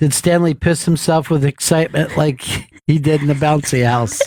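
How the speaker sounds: ordinary talk, nothing marked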